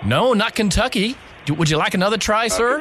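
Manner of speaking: bad put-on American accent. Speaker, in a guessing game about where they're from, answers a guess: bad American accent. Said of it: "seeing if you would believe me that I was had an American accent".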